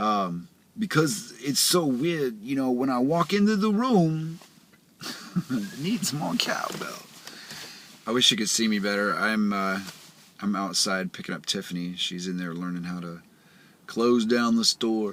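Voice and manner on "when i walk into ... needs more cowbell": put-on New York accent character voice, pitched up. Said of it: "it gets too close to Christopher Walken".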